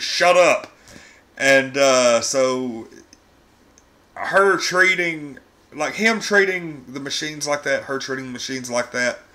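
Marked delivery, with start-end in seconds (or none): 0.0-0.7 mock yelling, high and raised. Retelling a character yelling at a friendly automated car: imitating someone yelling. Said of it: "she's just yelling at it".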